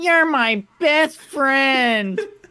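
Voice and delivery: very high, cheap talking-toy voice box sound. Describing an old stuffed animal's talking voice box, the speaker imitates it: cheap stuffed-animal voice box. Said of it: "first gen stuffed animal technology in the voice box".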